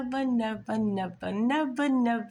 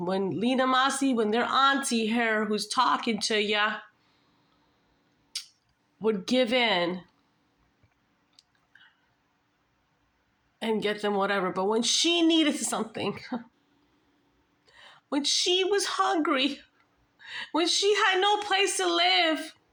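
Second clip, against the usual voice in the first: voice getting teary and emotional. An aunt talking about her nephew and his sibling gets tearful. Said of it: "I'm just getting tearful".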